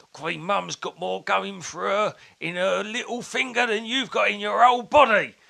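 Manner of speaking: put-on loud, high, furious old bloke voice. Retelling an old bloke grabbing the speaker: imitating an angry old bloke. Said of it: "just wanting to knock my block, block off and just grabbing me and going".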